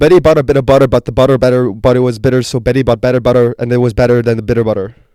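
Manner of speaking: loud, rapid tongue twister rattled off at speed. Told to go faster in a tongue twister game, fast tongue twister.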